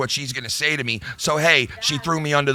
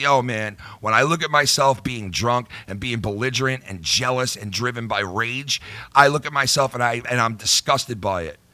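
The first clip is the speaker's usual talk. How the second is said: ordinary talk, nothing marked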